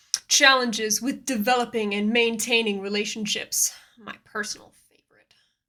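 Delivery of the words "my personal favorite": half-whispered, breathy, dry deadpan sarcasm. Introducing a point about relationships, then naming it: sarcastic. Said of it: "that was sarcasm".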